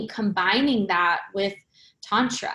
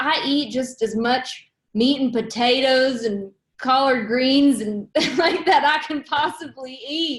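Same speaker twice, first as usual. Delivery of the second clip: put-on South Carolina Southern accent; 4 semitones higher, 3 dB louder than usual. Retelling what Howard from South Carolina would say: imitating Howard's Southern accent. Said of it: "He's got a Southern accent".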